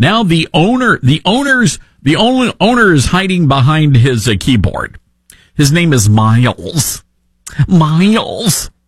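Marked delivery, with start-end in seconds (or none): 7.7-8.7 put-on Michigan accent on the word. Repeating a restaurant owner's name in a Haley Stevens Michigan accent. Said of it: "that's my Michigan accent".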